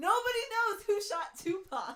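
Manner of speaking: shrill, high, booming shriek. Retelling what he yelled mid-hop over the hose: retelling his scream. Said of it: "he just screams".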